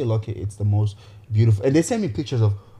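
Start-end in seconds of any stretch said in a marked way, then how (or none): none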